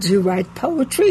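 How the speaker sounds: ordinary delivery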